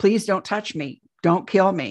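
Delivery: acted-out panicked pleading tone. Retelling lying in bed as figures move closer, reliving panicked pleading. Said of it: "I'm panicking and freaking out".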